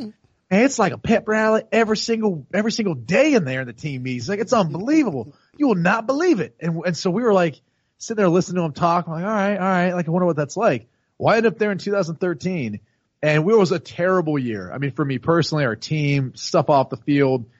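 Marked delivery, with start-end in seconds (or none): 0.0-6.6 put-on, animated Southern accent, pitched up and swinging. Retell what a player who left Denver for Seattle told you, in Brandon Stokely's Southern accent. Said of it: "he got the Southern accent".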